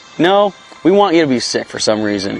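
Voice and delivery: ordinary talk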